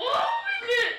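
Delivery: voice cracking. Reacting to an invitation to come to L A, voice cracking. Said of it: "it cracked".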